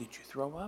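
spoken quietly. In church, a mother asks her son, just back at the pew, quietly. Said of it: "She asked quietly".

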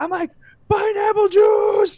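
very high, shrill, loud acted scream. Retelling calling to a deaf barback at night: imitating someone screaming.

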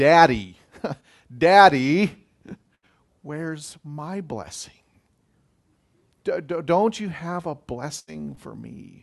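put-on babyish weeping and sobbing, stammering. Retelling Esau's plea to his father: Esau weeping like a baby. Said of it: "he weeps like a baby".

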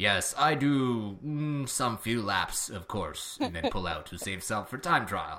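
slow, drawn-out caveman-style broken speech. Talking about a rider's road race plan, a speaker voices Fabian's likely thoughts in a Fabian impression. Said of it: "my Fabian impression is basically my caveman impression".

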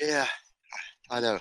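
soft, breathless, winded, out-of-breath voice. Answering the host after getting a baby into the crib, out of breath. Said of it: "I'm out of breath".

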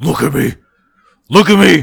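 furious, very loud, raspy, rough angry yell. Describing what works in a horror clip, imitating angry Freddy. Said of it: "I like when he gets angry, when he's like".

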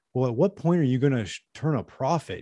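play-acted, patronizing, condescending questioning tone. Retelling how a man questioned Bezos about profits, imitating a condescending question. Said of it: "asking him kind of like condescendingly".

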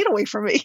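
sounding annoyed. Retelling what was said back to a coach: retelling own annoyed words. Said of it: "I was so annoyed".

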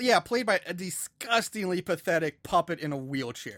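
usual speaking voice

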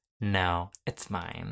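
put-on bitchy tone. Recapping a scene, the speaker acts out Emma's reply to another character: mock-bitchy retort as Emma. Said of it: "And Emma cuntily replies".

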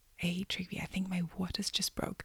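quiet whisper. Retelling telling a partner in a theater something quietly: retelling a whisper. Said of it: "I whisper".

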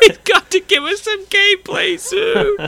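put-on very high, very loud crying blubber. Imitating executives sitting there crying: imitating crying executives. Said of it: "Sony execs sitting there crying, going".

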